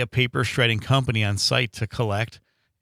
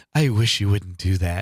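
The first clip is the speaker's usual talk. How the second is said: put-on provocative female voice. Retelling a radio ad line: imitating a provocative woman's voice. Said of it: "a provocative woman's voice going".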